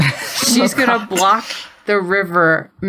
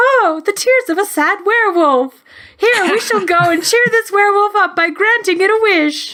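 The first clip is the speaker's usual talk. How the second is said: very high, cute little magical creature voice; 12 semitones higher than usual. Imagining a little river creature in a Harry Potter story, in a cute little magic voice. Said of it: "in that cute little magic voice".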